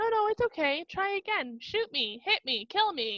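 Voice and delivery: high-pitched witch voice. Retelling a story where a witch's voice taunts a shooter: imitating the witch's voice. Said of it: "So the witch is like, or this voice is like".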